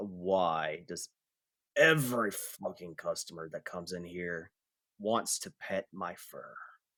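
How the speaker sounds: low, soft, sighing, exasperated complaining voice. Telling a story, voicing a character's complaint: sighing. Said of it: "He sighs".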